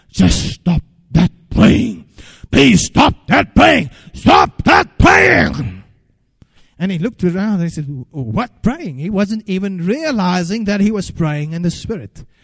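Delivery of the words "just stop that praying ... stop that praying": agitated, loud, rough, creaky demon voice. Retelling how demons inside a girl spoke during prayer: demonic voice. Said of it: "the demons spoke in that demonic voice saying".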